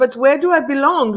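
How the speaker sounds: normal talking voice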